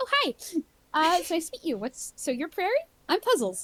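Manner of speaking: happy, bright, high, swooping sing-song voice. Voicing a character who greets a camper with happy squinty eyes: happy Puzzles voice. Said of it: "She goes".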